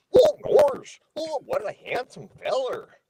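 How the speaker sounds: very high-pitched, swooping cartoon dog voice. Retelling meeting the cast member who plays Goofy, in the Goofy voice. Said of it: "hear the Goofy voice".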